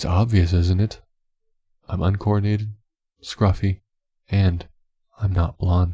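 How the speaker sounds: usual speaking voice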